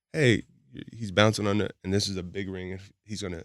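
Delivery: ordinary talk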